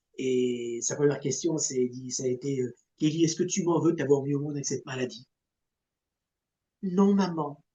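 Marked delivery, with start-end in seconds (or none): 6.9-7.5 put-on tiny, high voice of a young girl. Retelling a sick little girl's answer to her mother: imitating a small child's voice. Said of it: "Avec une petite voix d'enfant".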